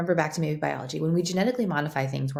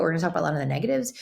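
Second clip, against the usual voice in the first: incredibly fast, rushed rapid-fire talking. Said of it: "I'm talking incredibly fast".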